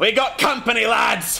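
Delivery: high, loud, angry yell. Game master voices the Kraken priest spotting the ship; cursing and yelling. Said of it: "curses, and yells".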